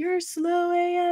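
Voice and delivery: high, slow, jeering, mocking shouted yell.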